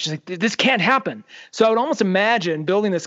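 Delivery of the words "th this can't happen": furious, angry, insistent tone. Retelling what a character says about the plan: imitating an angry character. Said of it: "she's angry about it".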